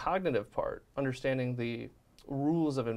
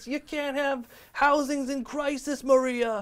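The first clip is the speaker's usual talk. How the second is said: mock panicked freak-out, higher, louder; 13 semitones higher, 4 dB louder than usual. Imitating a pundit freaking out on national TV: imitating a panicked pundit. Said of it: "freaking out on national T V".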